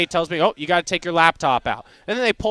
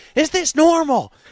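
put-on very high, shrill, panicked scream; 10 semitones higher, 4 dB louder than usual. Retelling a woman freaking out on a loud flight, imitating her scream. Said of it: "She screams".

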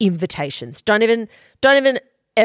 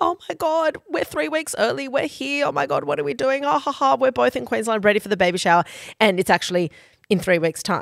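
high, frantic, hysterical babble with mock laughing; 5 semitones higher, 3 dB quieter than usual. Retelling a voice message sent on arriving three weeks early: imitating a hysterical voice message. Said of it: "So here we are in hysterics".

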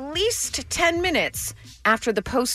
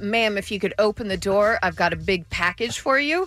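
ordinary talk, nothing marked

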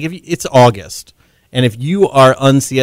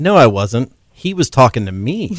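ordinary talk

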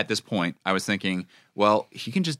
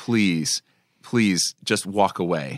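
mock pleading, much lower; 2 semitones lower than usual. Recapping a show scene, acting out a sympathetic character's plea. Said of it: "He's like".

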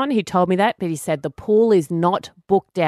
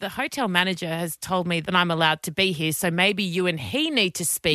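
ordinary delivery

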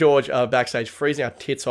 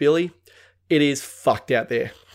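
usual speaking voice

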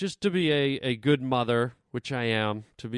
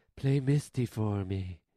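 very sexy, sultry, seductive voice; 3 semitones lower, 4 dB quieter than usual. Retelling a movie stalker's call to the radio station, imitating a real sexy voice. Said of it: "in this real sexy voice".

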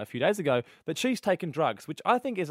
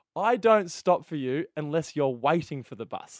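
ordinary delivery

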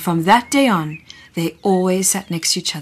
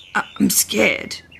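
small voice, higher; 4 semitones higher than usual. A narrator reads the big dinosaur answering Dina, in a small voice. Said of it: "said the big dinosaur in a small voice".

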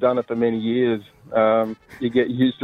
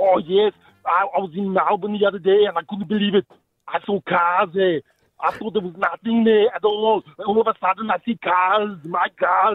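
put-on Austrian accent, pitched up; 8 semitones higher than usual. Asked for more, doing the impression again: Arnie voice. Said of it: "Can you do more, [name]?".

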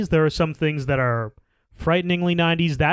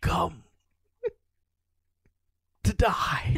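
strange, breathy, whispered dark wizard voice; 6 dB quieter than usual. Doing the voice the other speaker just teased: weird Voldemort voice. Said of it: "that weird Harry Potter voice of Voldemort".

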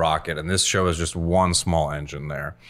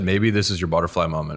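ordinary talk, nothing marked

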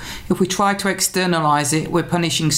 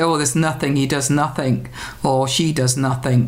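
ordinary talk, nothing marked

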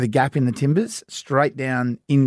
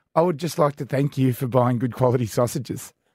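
normal talking voice

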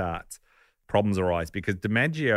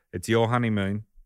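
very passive-aggressive, pointed tone; 2 semitones higher than usual. Retelling a husband's reply on the honeymoon: imitating Joe passive-aggressively. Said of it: "very passively aggressively".

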